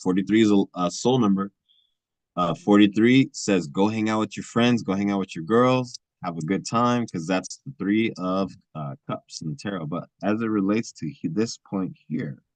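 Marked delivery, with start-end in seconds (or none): none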